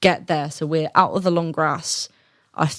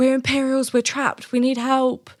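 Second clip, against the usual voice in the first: acted, high-pitched shouting; 8 semitones higher than usual. Retelling being trapped and calling for help: retelling own shout for help. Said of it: "I'm shouting, like".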